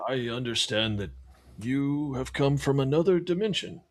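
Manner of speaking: put-on old scholar voice. Voicing an old scholar greeting the visitors: old Corvus voice. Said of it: "I'm trying to do old Corvus voice".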